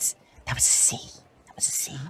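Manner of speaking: barely audible, very quiet whisper. Voicing a fellow musician correcting a mistake: very quietly. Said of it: "very quietly".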